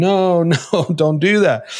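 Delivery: put-on scream, cried out high and slow. Retelling own reaction to people with an extreme legalistic position: imitating own scream.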